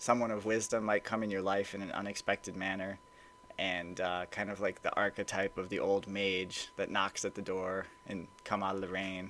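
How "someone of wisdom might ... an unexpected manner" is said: ordinary talk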